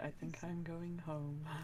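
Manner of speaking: low, mumbled, muttered under the breath. Speaking as a character in a scene, muttered under breath. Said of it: "in Dwarvish under my breath I say".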